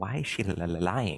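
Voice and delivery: whispering in a low tone. A character whispers to anyone still left standing next to him, low-toned whisper. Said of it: "whisper in a very like low tone".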